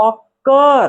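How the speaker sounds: occur, with stress on second syllable cur. Hindi lesson on english word stress, saying occur with stress on cur. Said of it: "कर पर लग रहा है".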